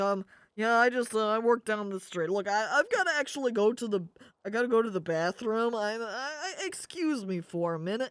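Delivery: uncomfortable, awkward, stammering, polite tone. Acting out the lady covering her nose while excusing herself: uncomfortable lady politely excusing herself. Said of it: "She's like".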